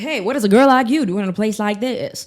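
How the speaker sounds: put-on mid-Atlantic transatlantic accent. Podcast host does a quick bit for listeners: transatlantic accent. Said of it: "I love a transatlantic accent".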